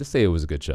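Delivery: ordinary delivery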